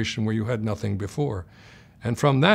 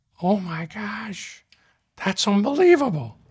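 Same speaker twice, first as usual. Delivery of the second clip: very high, slow, squeaky little voice; 10 semitones higher than usual. Retelling what he said on first seeing a vitrectomy, in Don Schaefer's squeaky little voice. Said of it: "say in a squeaky little voice".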